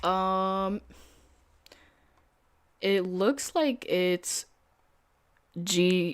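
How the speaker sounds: stammering speech. Looking up the gold symbol on Tradeovate, stuttering. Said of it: "I'm stuttering".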